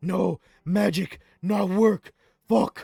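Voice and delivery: frustrated creature voice. Voicing a creature whose flame magic fails: frustrated monster voice. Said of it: "and he's like".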